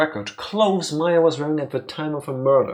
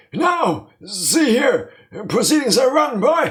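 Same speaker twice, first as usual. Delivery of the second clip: put-on old man voice, higher pitched; 9 semitones higher, 5 dB louder than usual. Playing a character in a scene with a detective: old man voice. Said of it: "My old man voice is slowly drifting away from me".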